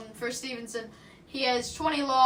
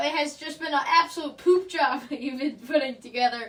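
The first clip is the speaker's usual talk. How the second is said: giggling, laughing through the words; 2 semitones higher than usual. Commentating a football game, mocking a quarterback's poor play: laughing while talking. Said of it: "we just can not contain the giggles".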